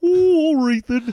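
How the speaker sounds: very high puppet voice, stretched as in a yawn. Caught mid-yawn by the interviewer, turning the yawn into a Muppet voice. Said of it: "I turned my yawning into being some kind of Muppet".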